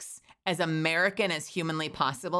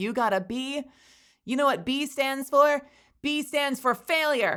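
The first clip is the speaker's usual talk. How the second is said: high-pitched, over-the-top, exaggerated American accent; 9 semitones higher, 4 dB louder than usual. Retelling a joke line from a bit, in an exaggerated American accent. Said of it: "I'm just doing the most American possible".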